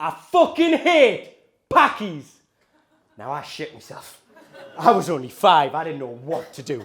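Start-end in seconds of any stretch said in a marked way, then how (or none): 0.0-2.2 high, slow, sneering chav voice. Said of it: "and went".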